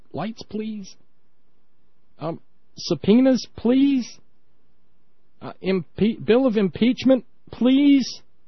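little, still voice. Speaker echoes a humble request from a Christmas special, little tiny still voice. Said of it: "just this little tiny still voice".

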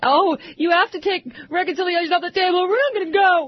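put-on childlike high whining. Talking about negotiations, mocking Eric Cantor whining like a little girl. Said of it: "you got Eric Cantor whining like a little girl".

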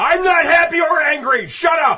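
mock furious yell, high, loud and slow.

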